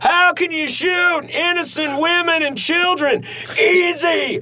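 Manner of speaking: high-pitched yelling. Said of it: "he's fucking yelling".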